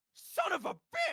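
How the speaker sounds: very loud, very high, slow, drawn-out shriek. Voicing a barkeeper who sees someone walk in: screaming. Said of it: "and he screams".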